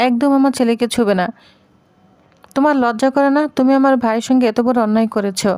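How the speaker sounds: plain reading voice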